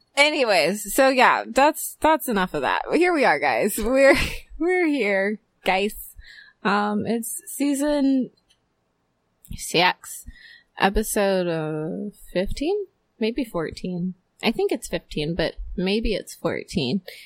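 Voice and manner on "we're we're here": higher, slow attempted Irish accent. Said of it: "sounded like it's supposed to be Irish".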